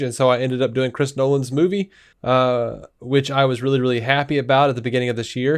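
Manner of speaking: plain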